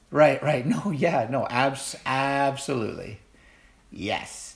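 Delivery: dripping, sneering sarcastic tone. Imitating people who sneer in your face: imitating sneering sarcasm. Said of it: "It's just dripping with sarcasm".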